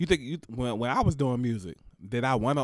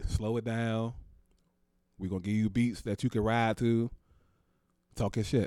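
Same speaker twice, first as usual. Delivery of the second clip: usual speaking voice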